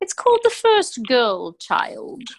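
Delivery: theatrical, overdone, very dramatic British accent. A guest announces the title of her next book, very dramatic British accent. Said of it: "with a very dramatic British accent".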